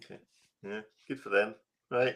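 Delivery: disappointed, let-down tone. Hearing which watch movements they use now: sounding disappointed. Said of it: "You sound disappointed".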